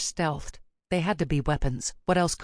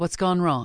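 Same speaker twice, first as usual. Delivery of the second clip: ordinary delivery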